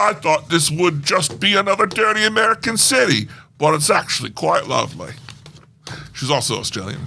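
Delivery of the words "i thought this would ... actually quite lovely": strong put-on British accent, very British, pitched up. Telling a story about a woman overheard in Chicago, quoting her in a very British accent. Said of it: "the woman said in her very British accent".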